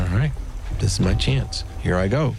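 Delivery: ordinary talk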